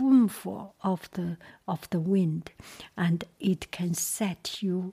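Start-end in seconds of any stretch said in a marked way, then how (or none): none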